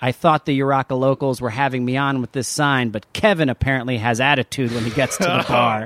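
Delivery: ordinary delivery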